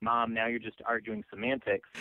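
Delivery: ordinary talk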